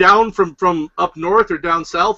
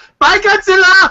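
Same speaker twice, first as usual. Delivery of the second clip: put-on small child voice, Japanese accent, higher, louder; 13 semitones higher, 7 dB louder than usual. Joking about the film's ending, acting out a little japanese kid. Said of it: "a little Japanese kid going".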